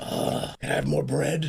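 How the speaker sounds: rough, gravelly, ground-out voice. Imagining Batman sitting there asking for more bread, Batman voice. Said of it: "I want him sitting there with the voice".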